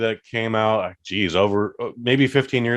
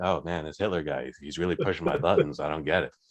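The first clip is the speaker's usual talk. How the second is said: very low, soft, quiet movie-star voice; 7 semitones lower, 8 dB quieter than usual. Acting out the movie's lead after his diary shifts from German to English, talking like Tom Cruise. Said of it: "he just talks like Tom Cruise".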